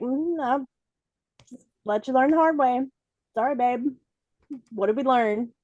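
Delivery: play-acted knowing, needling, passive-aggressive told-you-so tone. Retelling how Lake reacts to a mistake: imitating Lake, passive-aggressive. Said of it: "Lake's like".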